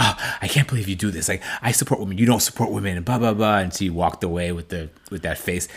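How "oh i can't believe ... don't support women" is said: fake, wounded, indignant outcry. Retelling a cast member's fake outcry of disgust at another woman: imitating a fake outcry. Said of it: "fake outcry of".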